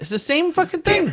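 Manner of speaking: high, exasperated outburst thrown up in disbelief.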